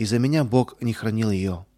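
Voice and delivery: ordinary delivery, nothing marked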